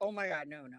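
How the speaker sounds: put-on panic. Imitating a man who hears a snippet of the speaker's voice: imitating someone panicking. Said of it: "get hives and start fucking looking around like".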